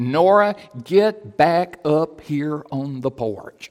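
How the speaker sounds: very slow, commanding, authoritative pastor voice. Speaker retelling how he called her back onto the porch, retelling an authoritative pastorly voice. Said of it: "in a very authoritative, pastorly voice".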